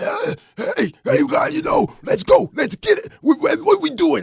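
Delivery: raspy voice pitched way up. Showing how the coach should sound on the sideline: imitating Coach Terry's raspy yelling voice. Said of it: "I need that voice to get real raspy 'cause that means he's yelling".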